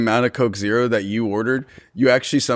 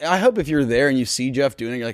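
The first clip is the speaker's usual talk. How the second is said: plain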